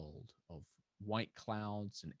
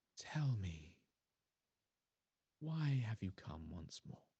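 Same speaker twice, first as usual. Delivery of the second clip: gentle, serene, feminine goddess voice. Voicing a goddess speaking from the wind: very soft feminine voice. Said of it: "a very soft, uh, feminine voice does kind of speak out".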